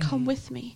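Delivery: sounds reassuring. Retelling what he says at her door: imitating an "I'm your hope" voice. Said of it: "I'm your hope" kind of voice".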